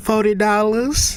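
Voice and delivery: streetwise tough voice.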